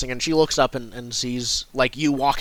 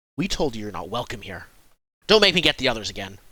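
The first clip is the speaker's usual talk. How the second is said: put-on hostile, unwelcoming farmer voice; 3 semitones lower than usual. Voicing a harvesting villager warning an unwelcome traveller: hostile villager. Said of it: "points at, um, Drundum and says".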